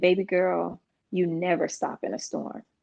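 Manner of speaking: soft, still, settled calm voice. Daughter recalls calling her dad for advice about driving; imitating dad's still, calm voice. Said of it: "in this still calm voice".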